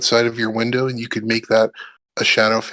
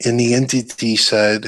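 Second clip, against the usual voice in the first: plain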